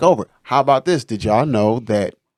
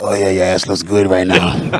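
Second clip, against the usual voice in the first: put-on male demon voice, lower; 3 semitones lower than usual. Telling friends how he and his lady do voices, Big Mouth man demon voice. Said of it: "I do the man demon voice".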